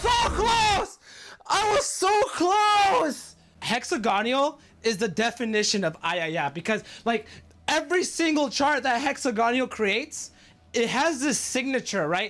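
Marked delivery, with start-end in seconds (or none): 0.0-3.4 very slow, high, drawn-out, furious raging scream. Streamer just missing a game chart, screaming in rage. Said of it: "[Screaming in Rage]".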